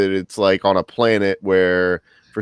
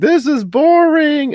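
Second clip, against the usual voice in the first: put-on, very high, loud small-child screaming; 6 dB louder than usual. Retelling how a little kid hated a test screening: Oliver screaming, retold. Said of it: "he just started screaming".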